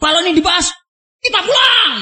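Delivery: loud, angry, threatening shouting. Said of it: "Keras loh ya".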